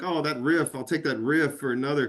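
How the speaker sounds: ordinary talk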